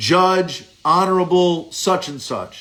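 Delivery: ordinary delivery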